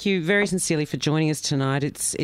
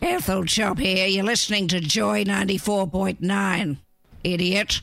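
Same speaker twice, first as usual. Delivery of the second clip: put-on old lady voice, higher pitch; 4 semitones higher than usual. Radio host goes to messages and voices a station ID in an Ethel Chop old lady voice. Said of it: "my old lady voice".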